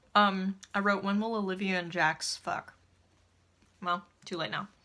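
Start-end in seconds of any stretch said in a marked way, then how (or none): none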